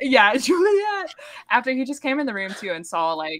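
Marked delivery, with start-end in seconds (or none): 0.4-1.1 very high, all-caps shriek. Retelling a book scene where a character screams a name: imitating Warner screaming. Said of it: "In all caps".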